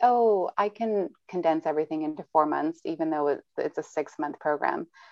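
ordinary delivery

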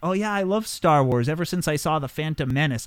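ordinary talk

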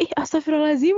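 high-pitched, exasperated, fed-up voice.

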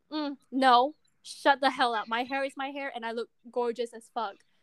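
normal talking voice

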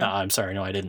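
put-on dry flat delivery. Retelling a cartoon character's reply about the missing food: imitating a dry line reading. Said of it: "very dry reading of that".

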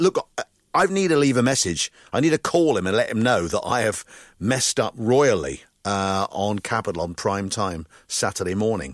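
ordinary talk

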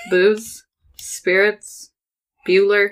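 flat droning monotone, no pitch lift. Redoing the podcast intro as a joke: Ben Stein monotone. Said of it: "I was thinking we could Ben Stein it".

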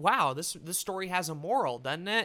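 ordinary delivery

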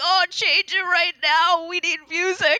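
high, theatrical, way-too-dramatic pleading tone. Retelling how the kids reacted to talk radio in the car: imitating dramatic kids' protest. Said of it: "that's way too dramatic".

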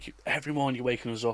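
mock irate, angry screaming. Retelling being shouted at early every morning: imitating someone screaming. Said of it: "absolutely screaming at me".

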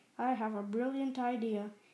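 plain reading voice

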